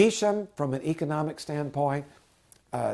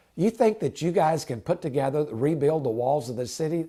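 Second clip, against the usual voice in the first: plain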